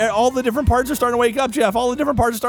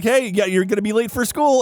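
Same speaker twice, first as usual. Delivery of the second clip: plain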